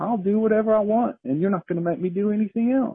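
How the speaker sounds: high, nonchalant, unbothered bear voice. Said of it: "very nonchalantly, very unstartled".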